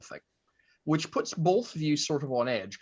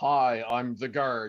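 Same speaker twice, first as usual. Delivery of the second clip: strict, stern, typical door-guard delivery; 3 semitones lower than usual. Voicing a guard standing by the door: stern guard voice. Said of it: "your very typical stern".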